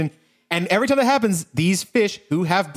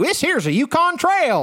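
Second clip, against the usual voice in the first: put-on old prospector voice, higher; 7 semitones higher than usual. Doing a stock prospector voice while describing how predictable a character is to friends; gold miner voice. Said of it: "Like that kind of guy".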